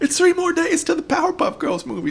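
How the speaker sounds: bad cartoon voice, very high, swooping pitch. Recalling a movie countdown someone used to announce: bad Brak impersonation. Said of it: "This is a bad Brack impersonation".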